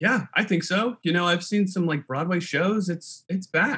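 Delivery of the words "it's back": voice cracking and breaking mid-line. Answering an interviewer's question, voice cracking. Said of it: "My voice cracked when I said it".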